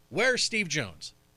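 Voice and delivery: mock impatient, eager, restless child-like voice. Retelling someone asking where a missing guest is: imitating Gary's impatient tone. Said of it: "equate that to a young seven-year-old impatient boy on Christmas Eve".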